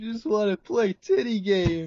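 tearful, sobbing, high, drawn-out crying voice. Retelling what a guy said when told off, the speaker is imitating someone crying. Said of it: "I think you're actually crying right now".

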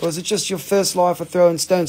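put-on English accent. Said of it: "'Cause I really don't talk like this".

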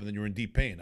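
ordinary talk, nothing marked

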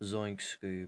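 very low, soft, hushed, shady mutter. Told his last try was too high-pitched, he tries the voice lower: sounds like a drug dealer. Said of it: "I sound like a drug dealer".

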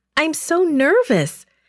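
high, eager, keyed-up, excited voice. Narrating Esther replying to Haggai, excited. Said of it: "said Esther excitedly".

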